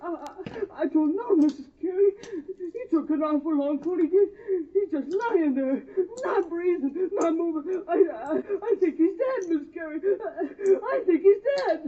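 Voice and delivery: sobbing. Telling Miss Carey he thinks Will is dead: crying. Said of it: "Stop crying".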